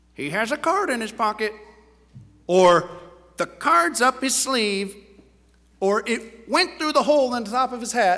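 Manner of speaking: parrot-style talking bird voice. Telling a joke about a magician's parrot that ruins his act: parrot voice. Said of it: "That's my parrot voice".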